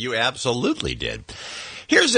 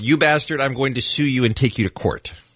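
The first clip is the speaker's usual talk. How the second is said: plain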